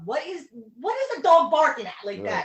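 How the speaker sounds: very loud, high, frustrated yell. Retelling being woken by a barking dog: imitating own yell. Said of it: "I yelled".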